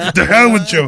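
high, loud mock bellow.

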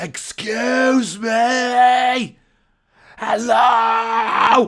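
very loud, very high-pitched yelling. Retelling how you shouted through a tiny keyhole in a door, retelling a shout. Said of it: "and I was shouting".

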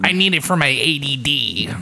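put-on really irritating, annoying little-kid voice. Act out a kid convincing their parents to get a fidget spinner, in a really annoying kid voice. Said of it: "that's a really annoying voice".

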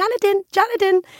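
put-on tiny, very high-pitched little toddler voice. Retelling how Teddy called Jonathan until fairly recently, in Teddy's little baby voice. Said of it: "this little baby voice going".

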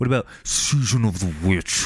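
eerie, spooky, scary horror-movie voice. Discussing favorite Halloween movies, asking about Halloween 3 in a scary voice. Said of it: "Was that a good scary voice?".

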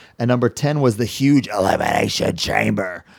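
put-on wrestling promoter voice. Announcing the tenth prize, slipping into a Vince McMahon voice. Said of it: "I don't know why I use that voice".

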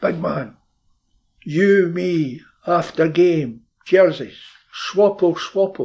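loud, high, drawn-out, deliberate shout in broken English. Retelling a player shouting across to the left back before a game: imitating Jinky shouting. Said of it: "he shouts to him".

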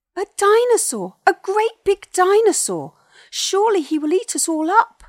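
very high, shrill, very loud, terrified yell. A voice from a hole in the log yells as a clawed hand touches the bark, a shrill yell. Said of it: "yelled the voice".

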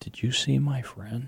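tiny, hushed, very soft small voice. Retelling what a woman asked you, in her little quiet voice. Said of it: "this little quiet voice".

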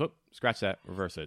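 put-on deadpan, totally straight. Quoting a favorite character's backwards line, retelling a deadpan line. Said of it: "totally like deadpan".

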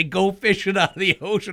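ordinary talk

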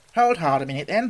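plain reading voice

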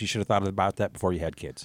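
low, quick deadpan delivery. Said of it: "she just looked at me straight-faced and goes".

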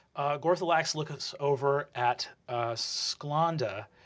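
plain

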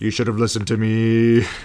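very loud, blaming, accusing bellow. Joining in imitating Zynbel berating Senua: imitating Zynbel, Senua's father. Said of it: "he's always like".

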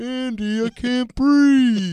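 high, strained, gasping squashed-furniture voice. Speakers imagine how a chair would feel, doing a talking chair impression. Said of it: "That was our impression of a chair".

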